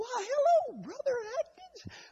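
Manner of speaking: put-on tiny, squeaky little old voice, very high pitch. Retelling a tiny woman at church greeting him, in a squeaky little old voice. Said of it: "That little old voice, she just squeaked".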